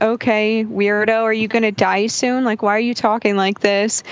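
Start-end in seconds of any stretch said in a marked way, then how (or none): none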